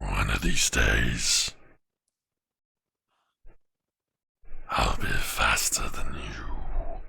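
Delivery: very low, creaky, rough voice. Closing the session, the narrator voices a figure speaking from the shadow. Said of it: "as soon as I did that voice".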